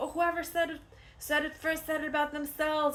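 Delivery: put-on high, loud child's playground shout.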